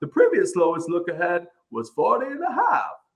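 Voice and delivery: put-on Australian accent, swooping and high. Challenged to read the whole segment in the accent, in an Australian accent. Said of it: "You gotta read the whole thing in the in the accent".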